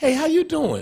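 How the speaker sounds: all-happy, cheerful voice pitched very high. Retelling coming downstairs to find the kid at home, retelling a happy greeting. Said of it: "I come down all happy".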